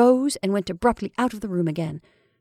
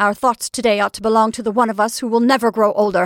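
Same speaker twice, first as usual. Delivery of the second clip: hard, harsh, raised, quick delivery; 5 dB louder than usual. [name] cuts in after Henry compliments Emma, in a hard voice. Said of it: "in a hard voice".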